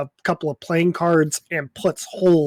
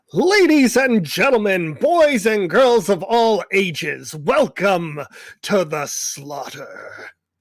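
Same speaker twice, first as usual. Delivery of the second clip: put-on announcer voice, higher; 3 semitones higher than usual. Voicing an announcer heard after the lights go out: announcer voice. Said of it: "You hear an announcer".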